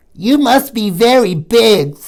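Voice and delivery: tiny, squeaky little creature voice, slow. Reading a story, an unseen tiny creature speaks to Gilly in a tiny voice. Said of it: "such a tiny voice must belong to something very tiny".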